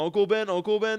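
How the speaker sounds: high, loud, same intonation repeated identically twice.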